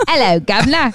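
very bad put-on British accent. Podcast hosts joking about doing accents, one tries a bad British accent. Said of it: "You do shitty accents".

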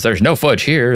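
plain, no-nonsense delivery. Retelling a robot's reply in a show scene: imitating a matter-of-fact reply. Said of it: "very matter-of-factly".

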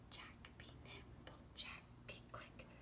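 hushed, breathy, whispered little mouse voice. Saying the rhyme again with listeners, starting in a mouse voice. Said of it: "let's use our mouse voice to start".

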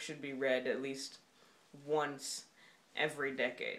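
"once" stressed, pauses around it, falling tone.

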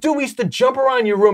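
high, thrilled, acted-out excited scream. Recounting a man screaming at them from his car, retelling excited screaming. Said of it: "He's screaming at me".

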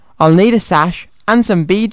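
plain

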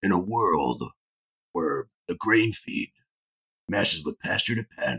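very low, dramatic movie-trailer narrator voice. Riffing on cowboys running around on screen, doing a movie-trailer voice. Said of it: "I could do my movie voice".

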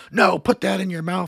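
play-acted, intense, high screaming. Retelling how a coach screamed at a smoker: imitating someone screaming. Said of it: "screaming at him".

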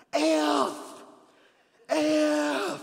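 acted-out shouted cussing. Telling how Mike lost it on the front porch, retelling a cussing yell. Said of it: "goes and stands on the front porch and yells".

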